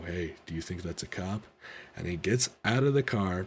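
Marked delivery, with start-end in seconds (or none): 0.0-1.4 whisper, much quieter and lower. Retelling hiding from a car's lights, whispering to Tony: retelling a whisper. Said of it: "I whispered to Tony".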